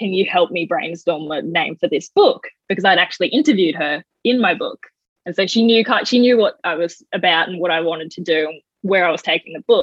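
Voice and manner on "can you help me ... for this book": put-on crying, tearful voice. Retelling asking a family friend to help name their book, retelling a crying plea. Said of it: "I reached out to her crying".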